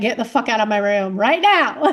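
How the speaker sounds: acted-out harsh, loud, rude, no-nonsense snapping tone. Retelling waking at three in the morning, imitating own rude snapping. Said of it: "I'm not nice about it like Lee is".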